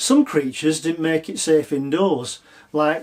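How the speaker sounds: plain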